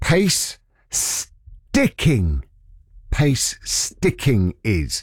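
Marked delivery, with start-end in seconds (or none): 0.0-2.4 slow, higher pitch, spelled out. Radio host repeating a term for listeners, said slowly. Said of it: "let me say that slowly".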